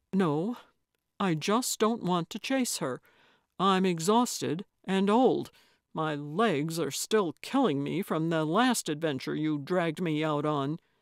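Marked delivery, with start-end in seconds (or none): none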